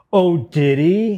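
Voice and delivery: put-on pointed sarcasm. Retelling a heckler's comment from the crowd: imitating a sarcastic heckler. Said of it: "your Tourette's is just sarcastic, pointed".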